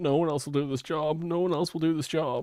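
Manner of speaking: high-pitched, mock tearful, weepy crying voice. Describing what the stream offers instead of content: imitating Rostov crying. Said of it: "It's just Rostov crying, going".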